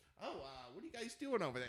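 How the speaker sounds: put-on quirky, dorky, nerdy kid voice. Retelling what a quirky kid at a store used to say: imitating a quirky nerdy kid. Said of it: "such a nerd".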